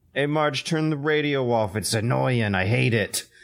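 put-on Boston accent with a blunt cadence. Imitating old people from New England; old New England Bostonian cadence. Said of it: "Bostonian New Yorkerish sort of cadence".

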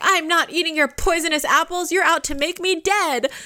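put-on very high, shrill, loud little-kid voice. Retelling a daughter's refusal to a villain queen: imitating a loud child. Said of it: "honey, lower your voice".

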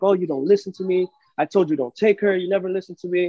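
loud, angry yelling voice. Retelling how she yelled at the speaker from the stairs, retelling someone yelling. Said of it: "she's like yelling at me from the stairs".

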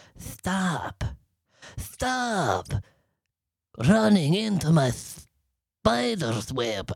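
little, soft, high-pitched spider voice with a lisp. Imitating how a spider would talk, lisping spider voice. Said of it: "I think they've got a lisp as well".

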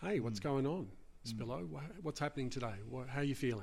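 soothing, reassuring tone. Speaker demonstrating how they start talking with a patient, calm reassuring voice. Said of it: "I just use a calm and reassuring voice".

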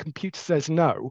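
ordinary delivery

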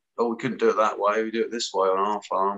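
plain

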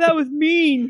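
put-on high, blubbering baby cry, like a big baby. Retelling how a character reacted on the show: mock crying like a baby. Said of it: "he starts crying like a baby".

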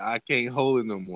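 plain

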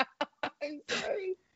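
whispered, breathy, giggling through the words. Apologizing to another speaker who says to stop laughing: laughing while talking. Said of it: "You have to stop laughing at me".

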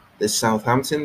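ordinary delivery

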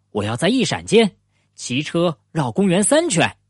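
ordinary delivery

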